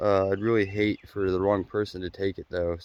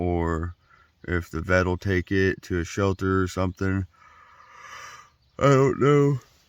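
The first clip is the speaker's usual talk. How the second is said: tired, talking through a yawn. Speaker signing off to viewers at the end of a video, yawning while talking. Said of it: "Sorry for the yawn".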